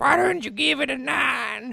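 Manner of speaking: put-on commenter voice, very high, very loud, shrill, creaky. Discussing a review score, the speaker puts on an internet commenter voice. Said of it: "It's my internet commenter voice".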